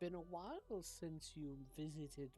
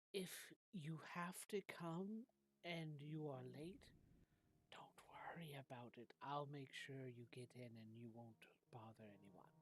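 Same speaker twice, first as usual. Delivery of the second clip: hushed, reassuring whisper; 4 dB quieter than usual. Voicing a character telling a visitor to come late anyway: whispering. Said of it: "and he kinda whispers".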